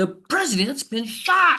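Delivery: accusing, very high-pitched, angry shouting cry. Retelling how a neighbor, angry as if it were his fault, told him. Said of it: "and she was angry".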